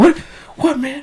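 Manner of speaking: loud high-pitched freaked-out yelp. Retelling a movie scene, imitating Mark Wahlberg freaking out. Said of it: "The Mark Wahlberg, like, freaking out kinda".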